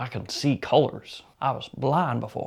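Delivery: exaggerated Southern dude voice. Joking while praising a fragrance after a word slipped out: most southern dude voice. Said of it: "like the most southern dude ever".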